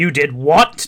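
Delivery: put-on stern father voice. Describing how a character now acts, mock stern dad voice. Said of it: "more of like a stern dad".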